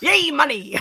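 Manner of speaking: cartoon crab character voice. Quoting a chat message the way Mister Krabs says it: Mister Krabs voice. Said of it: "I feel like Mister Krabs".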